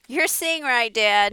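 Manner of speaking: loud shouted yelling, called out. Narrator answers Dad while pushing a wheelbarrow down the road, yelled. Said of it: "I yelled".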